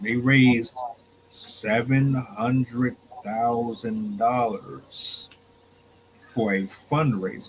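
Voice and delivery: very slow, deliberate, each word laid out. Speaker telling a story about a woman, saying this very slowly. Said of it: "let me say this very slow".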